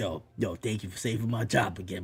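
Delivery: mock coach voice, whispered. Retelling what Daboll says to Jackson Dart after touchdowns: imitating Daboll whispering. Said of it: "he's whispering in his ear".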